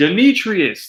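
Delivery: sudden yell, pitched high. Retelling how a teacher called out a name in class: imitating a teacher yelling. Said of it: "and then the teacher yells".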